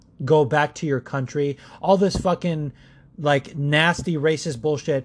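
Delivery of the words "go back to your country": ordinary talk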